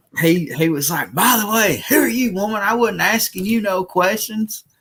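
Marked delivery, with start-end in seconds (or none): 1.1-4.6 aggressive, combative barking yell, pitched up. Retelling a store incident, the speaker acts out a man yelling at a woman, retelling aggressive yelling. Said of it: "he was yelling the whole time, being aggressive".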